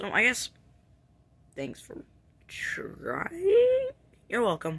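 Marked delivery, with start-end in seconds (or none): 0.0-3.9 drawn-out, sing-song sarcastic lilt, pitched way up. Thanking someone for a failed try in a skit: sarcastic. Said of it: "Being sarcastic".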